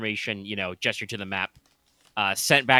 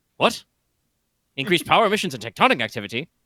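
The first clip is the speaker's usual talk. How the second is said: loud, high, surprised, startled exclamation; 6 semitones higher, 5 dB louder than usual. Voicing Lord Arthur repeating a report in surprise, Galaxy Quest-style. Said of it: "gonna totally fucking Galaxy Quest this shit".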